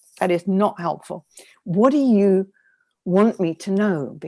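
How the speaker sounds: put-on tough, firm voice. A speaker recounting talking back to their inner critic, retelling a tough, firm tone. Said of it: "You have to be quite tough with your critic".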